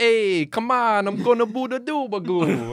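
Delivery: put-on very high, garbled, over-the-top New York accent. Pitching a stereotyped character, the speaker does his line in an exaggerated New York accent. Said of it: "His accent is, you can't understand him".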